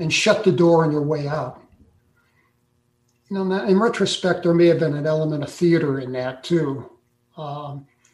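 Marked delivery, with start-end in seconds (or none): none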